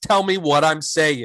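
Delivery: normal talking voice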